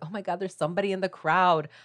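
put-on super girly exclamation. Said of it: "making all the guys sound super girly".

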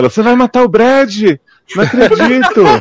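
frantic, very high, desperate pleading. Retelling a film scene, acting out the screaming mother, imitating desperate panic.

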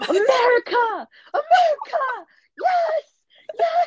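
mock thrilled, excited screaming pitched very high. Retelling spotting a bald eagle while on the phone with dad: retelling excited screaming. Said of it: "I'm just screaming".

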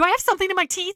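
very loud, very high, aggressive and combative. Reading a romance aloud, the heroine attacks as defense: aggressive. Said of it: "Why is she so aggressive?".

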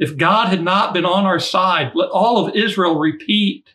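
high, slow shout at the top of the lungs. Acting out a caravan leader's call to the crowd: imitating a shout at the top of lungs. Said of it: "he shouts at the top of his lungs".

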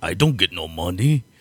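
really bad put-on Russian accent. Mocking an actor's film line: Andrew Bryniarski's bad Russian accent. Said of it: "a worse Russian accent than John Malkovich".

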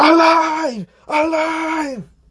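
shrill, very high, drawn-out hype yell. Describing the little guy in their head, the speaker acts out screaming. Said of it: "And I'm screaming".

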